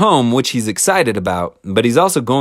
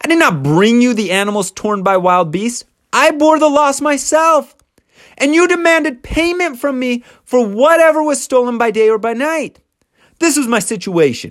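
imitated yell, pitched higher; 13 semitones higher than usual. Retelling a son-in-law's rant at his father-in-law: imitating someone yelling. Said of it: "And he yells".

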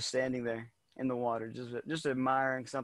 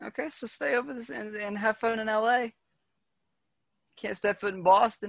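attempted Boston accent. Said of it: "I'm not even gonna attempt another Boston accent".

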